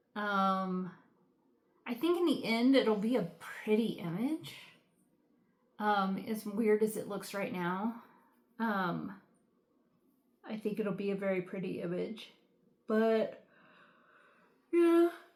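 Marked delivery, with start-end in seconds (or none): 12.8-15.1 pitched-up words spoken mid-yawn. Talking about a kit in mid-afternoon without a nap, yawning. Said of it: "sorry for yawning".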